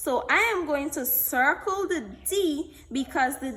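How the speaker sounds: usual speaking voice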